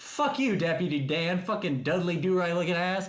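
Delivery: high-pitched shouting. Retelling yelling at a man who told them to calm down: retelling own yell. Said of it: "And I, like, yell it".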